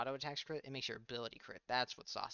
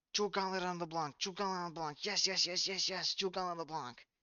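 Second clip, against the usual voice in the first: put-on high screaming, same call over and over; 5 semitones higher, 4 dB louder than usual. Retelling what they screamed while watching: imitating own past screaming. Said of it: "I was screaming".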